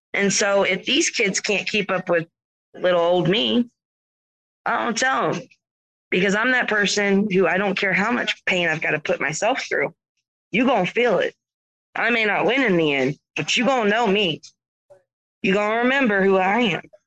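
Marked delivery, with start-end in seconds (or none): 7.4-16.8 drawling Southern accent. Describing how you play hard against the kids, in a Southern drawl. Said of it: "Did you like the Southern draw on that?".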